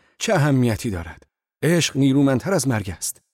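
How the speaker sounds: loud crying-out shout. The narrator answers his companion's words: shouting. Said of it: "فریاد زدم".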